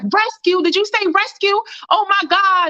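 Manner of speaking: very high-pitched, acted-out hysterical cry of disbelief. Retelling what a woman said on hearing rescue was coming, imitating her hysteria. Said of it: "She sound hysterical".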